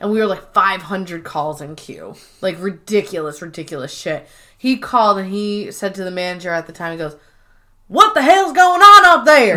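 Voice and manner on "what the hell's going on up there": put-on heavy Texan accent, very loud and high. Retelling a caller's question to the manager during a call backlog, thick Texas accent. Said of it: "He had a very thick Texas accent".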